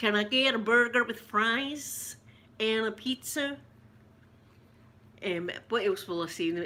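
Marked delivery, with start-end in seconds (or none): 0.0-3.6 slow, put-on, attempted American accent. Testing out whether an accent sounds right, in an attempted american accent. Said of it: "Does it sound American?".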